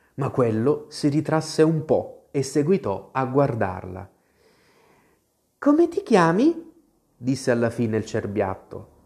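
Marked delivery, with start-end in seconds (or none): 5.6-6.7 sweet, kind, gentle and very high. A fawn, after shying from an outstretched hand, finally speaks in a sweet, gentle voice. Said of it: "Che voce dolce e gentile aveva".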